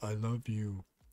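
put-on dopey cartoon voice. Streamer reading a chat line like Patrick from SpongeBob voice. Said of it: "like Patrick from SpongeBob, where he's like".

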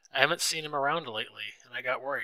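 ordinary delivery, nothing marked

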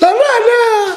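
put-on eager, excited child voice.

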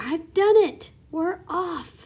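loud stretched-out shout. The centipede pokes his face through the ceiling hole to the others: shouting.

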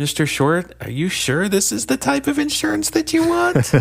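hesitant, unsure voice rising at the end. Demonstrating how the insecure salesman closes with a question, unsure voice rising up. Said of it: "his voice always goes up a little bit, and it's always not certain".

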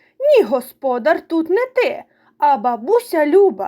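very stern, grave, severe tone. Butsyk answers the water beetle who calls himself master: very stern. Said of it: "дуже суворо мовив".

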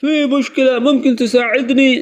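worried anxious tone. Teaching an arabic request for help, worried tone. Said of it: "دوبارہ سے سن لیں یہ reaction اپنا، ایک پریشان لہجہ".

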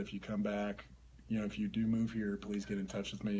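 usual speaking voice

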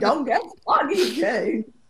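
high, admonishing tone in changed voice. Retelling what Katharine Hepburn said: Katharine Hepburn impression. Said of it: "a Katharine Hepburn impression".

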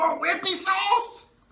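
acted, shrill, really loud, high, drawn-out holler. Describing how they ask about the mild wing sauce, said really loud. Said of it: "they'll say it like really loud".

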